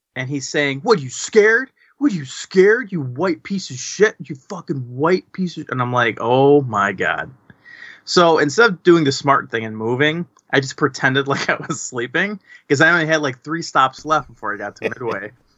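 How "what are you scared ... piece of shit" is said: mock hostile, high, taunting, jeering shout. Retelling a guy yelling at the speaker, retelling a yell. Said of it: "he's yelling at me".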